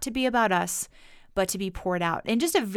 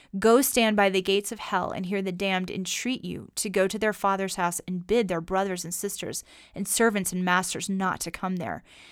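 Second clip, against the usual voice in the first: usual speaking voice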